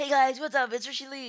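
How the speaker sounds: mock very high, very loud, excited hype. Imitating a video host's on-camera greeting: imitating Richard Lee all excited. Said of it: "all excited".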